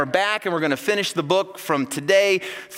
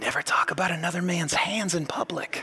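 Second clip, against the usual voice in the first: hushed, quiet whisper; 7 dB quieter than usual. A father retells his son whispering to him at a game, imitating a whisper. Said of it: "he just whispers to me".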